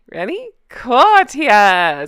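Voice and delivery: gleeful, excited, with swooping pitch. Host opening a video segment for viewers, gleeful. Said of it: "I hope you can hear the glee in my voice".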